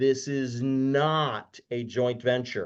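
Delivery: spelled out word by word, really slow, drawn-out "not". Repeating a key point about lending for emphasis: said really slow. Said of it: "I'm gonna say this again really slow".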